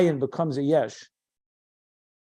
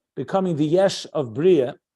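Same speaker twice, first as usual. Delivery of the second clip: ordinary talk, nothing marked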